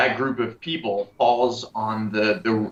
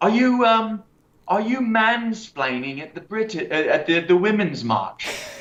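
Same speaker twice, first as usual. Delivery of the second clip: very high-pitched put-on British accent; 10 semitones higher than usual. Retelling what a woman said to the speaker at the women's march, in a british accent. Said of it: "she says in this British this British accent".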